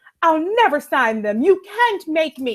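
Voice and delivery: put-upon, wronged-sounding victim voice. Recapping a TV scene, imitating a character refusing to sign papers: Melly impression. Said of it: "that's my Melly impression".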